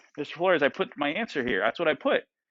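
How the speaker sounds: usual speaking voice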